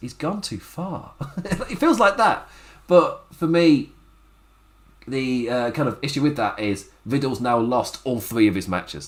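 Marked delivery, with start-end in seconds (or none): 0.0-1.1 very quiet, hushed, solemn, grave announcer voice. Speaker describes how Bobby Lashley was being presented, imitating a serious commentator. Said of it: "Commentator's serious voice".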